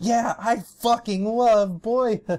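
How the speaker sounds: mock sarcastic gushing, very high pitched and drawn out. Retelling how two reviewers break their usual monotone: imitating sarcastic enthusiasm. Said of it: "break from their usual, like, monotone and say".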